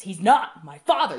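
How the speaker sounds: mock-aggressive yelling. Speaker recounts a film scene where a son answers his mother, retelling an aggressive yell. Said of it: "He yells it very aggressively".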